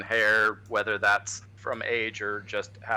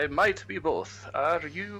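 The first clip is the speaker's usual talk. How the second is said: silly, goofy put-on character voice; 7 semitones higher than usual. Speaker voices a character answering the party's question, in a stupid character voice. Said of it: "This stupid voice".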